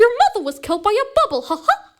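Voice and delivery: squeaked out high and bouncy. Repeating the sentence after a listener's reaction, in a Mickey Mouse voice. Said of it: "that animal is Mickey Mouse".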